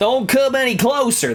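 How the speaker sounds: put-on Southern accent. Voicing a game character line after deciding on a southern accent: put-on southern accent. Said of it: "Southern accent".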